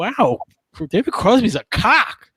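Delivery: high, loud, blunt delivery. Retelling a companion's remark about a rock star: imitating a friend saying it loudly. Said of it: "says really loud".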